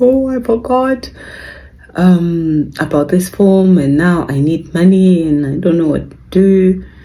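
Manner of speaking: mock crying, high and tearful, drawn-out um. Retelling a daughter crying on the phone to her dad: imitating her crying daughter. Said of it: "she's crying on the phone".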